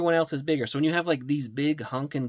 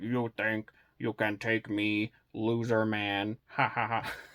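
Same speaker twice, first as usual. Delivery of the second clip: low, computerized, machine-like digitized robot voice; 5 semitones lower, 4 dB quieter than usual. Voicing a figure he is showing off, the speaker uses a digitized voice. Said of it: "to be like a digitized voice".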